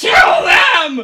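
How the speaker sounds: piercing, high, shrill, very loud scream. Voicing a character holding her head during a spell: screaming.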